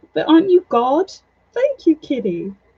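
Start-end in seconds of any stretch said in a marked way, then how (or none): 0.2-1.1 high, screeching, screaming cat voice. Retelling how the cat screams to turn the rain off: imitating a cat screaming. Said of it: "he screams at me".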